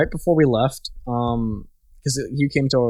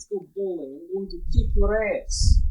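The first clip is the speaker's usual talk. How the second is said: heavy put-on Eastern European accent, pitched up; 7 semitones higher than usual. Performing an impression when asked, before ending the recording: thick Eastern European accent. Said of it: "speak in thick Eastern European accent".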